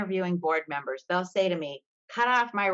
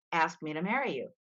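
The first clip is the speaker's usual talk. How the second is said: secretive, hushed, half-whispered stage whisper; 4 dB quieter than usual. Retelling what she half-whispers to a volunteer: imitating her own half-whisper. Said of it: "I'll whisper in his ear".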